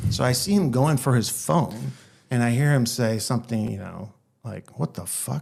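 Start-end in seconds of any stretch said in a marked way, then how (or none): 4.8-5.4 quieter muttered curse under the breath. Retelling what the other pilot said on the intercom: imitating someone muttering under breath. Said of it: "under his breath".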